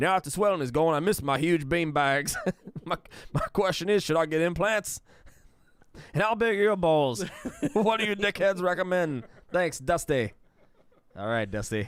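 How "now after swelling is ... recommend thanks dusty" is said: terrible, poorly done put-on Australian accent. A show host reads out a listener's letter as Dusty, in a bad Australian accent. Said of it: "That is the absolute worst Australian accent".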